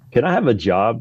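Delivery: plain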